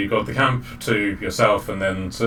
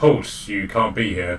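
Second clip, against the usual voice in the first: normal talking voice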